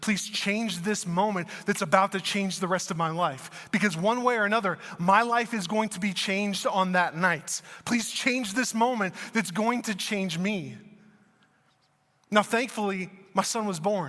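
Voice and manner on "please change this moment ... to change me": ordinary delivery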